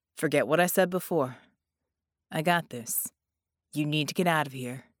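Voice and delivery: steady, composed, calm, low voice. Shielding a woman from a lumbering attacker, he tells her to leave, calm. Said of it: "he said calmly".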